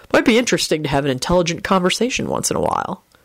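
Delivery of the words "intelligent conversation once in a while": plain reading voice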